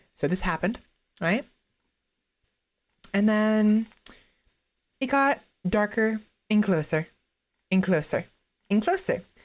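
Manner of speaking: speaking while eating. After apologizing for eating Burger King, the speaker starts telling a story, talking while eating. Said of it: "sorry I'm eating".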